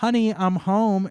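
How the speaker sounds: put-on girl voice.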